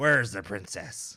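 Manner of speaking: put-on pirate accent. Retrying Captain Finnegan's line with the right accent: Captain Finnegan accent. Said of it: "That's not the accent".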